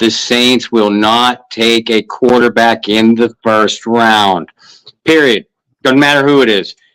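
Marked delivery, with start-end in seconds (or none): 0.0-4.5 slow, measured, deliberate, unhurried delivery. Repeating the previous sentence, announced as said slower: slow and deliberate. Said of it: "I'm going to say that slower".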